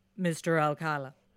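put-on deep interrogator voice. Retelling a defendant questioning himself as interrogator: imitating a deeper than normal voice. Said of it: "doing a kind of deeper than normal voice for the interrogator".

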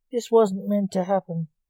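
ordinary delivery

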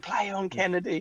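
very high, shrill, screaming jeer. Retelling a man who would not stop shouting, imitating a man screaming. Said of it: "He's like screaming".

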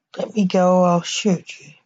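ordinary delivery

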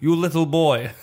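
put-on Russian-accented speech. Retelling what a woman kept saying to him; deep Russian accent. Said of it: "And she kept saying to me".

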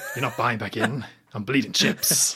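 put-on quiet, half-whispered voice. Retelling a film scene in the voice of Felix: imitating Felix's half-whisper. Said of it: "trying to be quiet and whisper it, but he's not really whispering".

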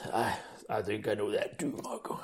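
put-on deep sultry murmur, very hushed, slow. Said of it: "That was going for deep and sexy".

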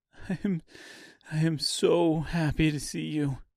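put-on sniffling with a cracked voice. Dorothy, having just cried on his shoulder, greeting him, cracked voice and wet sniffles. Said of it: "Dorothy said with a cracked voice and a set of wet sniffles".

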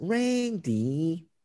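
high, whiny, whingeing, complaining tone. Critiquing a character's voice, speaker mimics Riddle saying Randy: mock-whiny Riddle voice. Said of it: "Riddle's whiny voice".

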